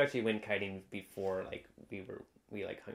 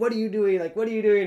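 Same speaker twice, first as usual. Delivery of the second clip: cranky, grumpy yell, very high, loud and shrill; 11 semitones higher, 13 dB louder than usual. Recalling a beach kiting memory, mimicking an old kiter yelling at the listener; imitating a grumpy yell. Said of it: "this old like grumpy kiter, he was like yelling".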